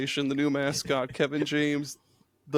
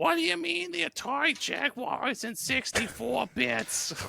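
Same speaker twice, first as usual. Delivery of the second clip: fake Brooklyn accent, very high pitched and drawn out; 10 semitones higher, 3 dB quieter than usual. Joking about hearing the word bits: put-on Brooklyn accent. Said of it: "we just kept doing the Brooklyn accent".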